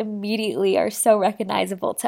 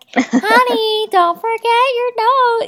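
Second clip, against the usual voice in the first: put-on nagging voice, higher, louder; 13 semitones higher, 5 dB louder than usual. Describing characters, the speaker quotes Mrs. Potato Head, imitating an endearingly nagging wife. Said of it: "the like endearingly nagging wife who's like".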